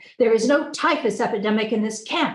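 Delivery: explosive, thundering, booming roar of anger. Reading a story where the camp doctor explodes in anger: thundering. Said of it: "he thundered".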